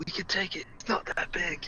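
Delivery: very quiet, barely audible whisper. Whispering to the others about a young dragon: whispering. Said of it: "I'm gonna whisper to them".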